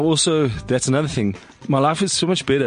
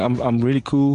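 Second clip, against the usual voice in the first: ordinary delivery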